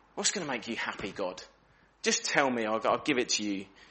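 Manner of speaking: mock sarcastic, bitter, pleading tone. Acting out the people's questions to god: imitating sarcastic, bitter questioning. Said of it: "the sort of sarcasm and bitterness in, in the way they're asking".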